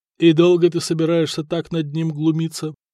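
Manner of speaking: ordinary talk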